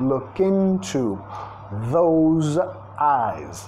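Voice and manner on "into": into, leaning hard on first syllable in. English lesson linking look into: stress on first syllable of into. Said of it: "vamos a vincular más into, acentuando la primera sílaba".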